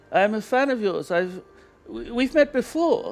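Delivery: put-on German accent in English. Retelling meeting a fan while getting coffee: imitating a German man's accent. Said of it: "What accent does he have?".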